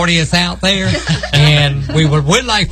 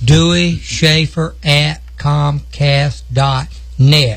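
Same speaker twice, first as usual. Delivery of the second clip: slow, unhurried delivery. Speaker repeats an email address, promising to say it slow; spoken slowly. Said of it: "I'm going to say it slow".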